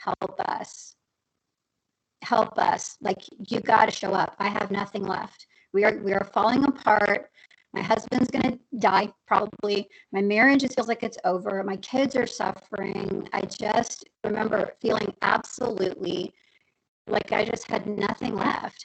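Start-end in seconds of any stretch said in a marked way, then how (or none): none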